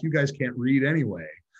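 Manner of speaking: loud mock shouted yelling. Retelling what the group yelled back to the rebel line: retelling a yell. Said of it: "So we all yelled back".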